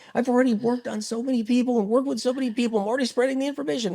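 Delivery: high, fast, defiant outburst.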